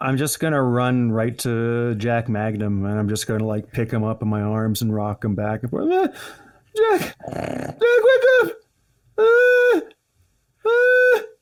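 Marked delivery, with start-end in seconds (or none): 5.9-11.2 very high, drawn-out bleating goat voice. Player runs to Jack Magnum and rocks him, doing goat voices. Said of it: "goat voices in his face".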